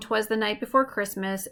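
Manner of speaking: plain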